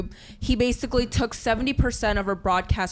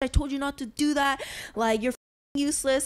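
put-on scream, higher; 4 semitones higher than usual. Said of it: "her screaming".

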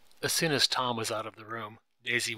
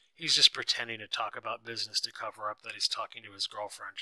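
usual speaking voice

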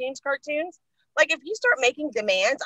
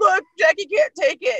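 put-on laughing, high, loud, cracking up mid-sentence; 7 semitones higher, 6 dB louder than usual. Retelling a coworker laughing at her on a call: imitating Jeremy laughing while talking. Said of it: "started cracking up and said".

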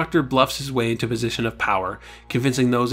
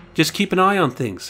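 ill at ease, uneasy, pitched-up voice; 6 semitones higher than usual. A man answers a question about his standing orders for the festival, uneasy. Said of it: "said Sid Harris uneasily".

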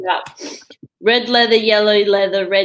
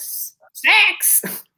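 very high New Zealand vowel, six sounding like sex; 12 semitones higher than usual. Explaining accent differences, the speaker mimics how New Zealanders talk; imitating New Zealand accent. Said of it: "They're like".

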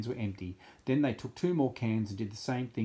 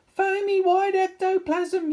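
high-pitched, shrill, terrified, frightened yell; 9 dB louder than usual. Reading a story aloud, the cheerleaders seeing foam burst from the lockers, yelled in fright. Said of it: "yelled the cheerleaders".

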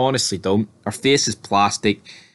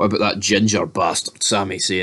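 put-on muttered aside. Imagining a line Roman Reigns might say: Roman Reigns muttering under his breath. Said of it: "Reigns gonna be like under his breath".

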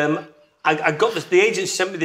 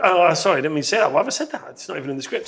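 mock laughing, laughing off a flubbed line. Retelling own apology at a casting, imitating laughing it off. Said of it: "trying to laugh it off and going".

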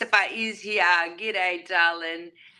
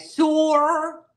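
overdone, drawn-out Australian vowel in sore; 8 semitones higher, 4 dB louder than usual. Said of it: "with an exaggerated "or,"".

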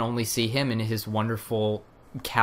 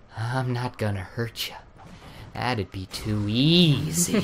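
slow, drawn-out film-star voice with words drawn out. Retelling a cartoon monologue, answering what the voice is: Jack Nicholson in The Shining voice. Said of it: "what's that voice?".

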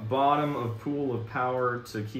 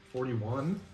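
unsure, uncertain questioning tone; 3 dB quieter than usual. Calling out a number during a card game: unsure, questioning tone. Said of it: "Why do you sound so unsure about that?".

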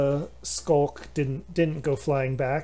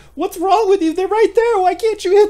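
put-on very high, loud, shrieking little girl voice; 11 dB louder than usual. Narrating a scene, voicing a little girl who starts screaming, screaming little girl. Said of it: "the little girl starts screaming".

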